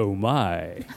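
voice at its deepest. Speaker describes practicing going deeper and deeper until the bottom: very deep voice. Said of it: "I'm practicing going deeper and deeper and deeper".

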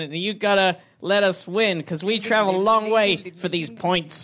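put-on American accent. A Team UK player begs for a victory: put-on American accent. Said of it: "This is my American accent".

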